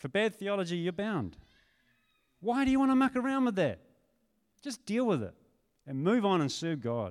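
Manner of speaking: heated, fired-up, worked-up, swooping preaching tone. Speaker addressing the church about people leaving over bad theology, worked up. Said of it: "I'm getting a little worked up".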